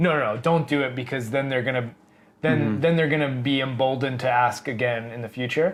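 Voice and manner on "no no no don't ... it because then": ordinary delivery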